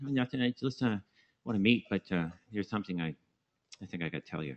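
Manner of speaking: nasal, comic put-on voice. Retelling a phone call, imitating the caller: Jerry Lewis, Joe Pesci voice. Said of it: "He talks like this. Kind of a Joe Pesci".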